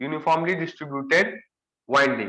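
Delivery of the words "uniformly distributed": the word "uniformly" lifted in pitch and leaned on. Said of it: "I'm stressing uniformly".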